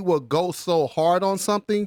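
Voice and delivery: ordinary talk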